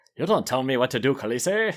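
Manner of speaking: put-on sophisticated, polished English accent in evil-genius villain style. Describing a Dothraki character who sounds like a Bond villain: Qotho with evil-genius English accent. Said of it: "sophisticated, evil genius English accent".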